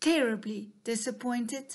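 plain

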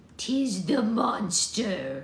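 words caught on a gasp. Maud, seeing the name written on the page: gasping. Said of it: "Gasped Maud".

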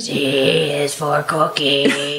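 low voice, dragging out every word. Answering a request for a little Cookie Monster: Cookie Monster voice. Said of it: "Can you give me a little Cookie Monster?".

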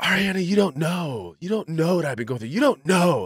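mock-dramatic, put-on dramatic man's voice. Mock a grown man addressing ariana, imitating a dramatic man. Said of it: "because he's so dramatic".

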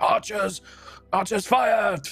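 very high, loud shout. Voicing a soldier in a distant battle: shouted battle command. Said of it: "another voice kind of like".

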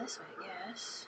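whispered with no voice.

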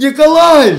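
loud, high, defiant yelling.

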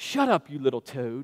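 put-on soft, low-pitched British accent. Retelling what the wrestler said to him as a child, in Bulldog's British accent. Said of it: "in his British accent".

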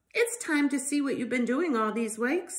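plain reading voice

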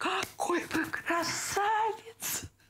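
high, slow, gushing, delighted voice.

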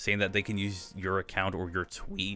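voice cracking, breaking in pitch. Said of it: "voice crack".

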